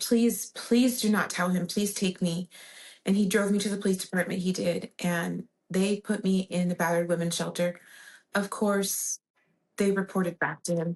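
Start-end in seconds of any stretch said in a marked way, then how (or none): 0.0-2.5 desperate, begging, pleading tone. Retelling begging someone for a ride to the police: retelling a desperate plea. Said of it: "I begged him".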